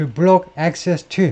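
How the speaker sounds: very slow, careful read-aloud of English.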